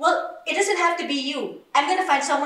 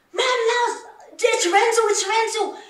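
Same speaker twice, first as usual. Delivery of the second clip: put-on full-throated, high, stretched-out repeated screaming; 7 semitones higher, 4 dB louder than usual. Retelling the nanny's words urging the speaker to come home, imitating the nanny screaming. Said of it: "She was screaming and screaming".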